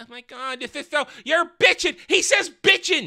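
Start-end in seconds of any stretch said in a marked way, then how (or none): 0.0-2.0 mock effeminate male voice. Mocking the way a man talks, in an effeminate voice. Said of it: "very effeminate, going".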